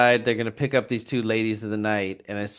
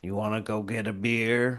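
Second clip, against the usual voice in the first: put-on intimidating tone, quieter; 5 dB quieter than usual. Retelling a scene where Henry asks Otis out for beer: imitating Henry intimidatingly.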